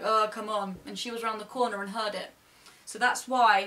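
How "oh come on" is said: mildly sarcastic tone. Retelling a remark once made to a child: retelling a sarcastic remark. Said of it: "I said something kind of sarcastic to the child".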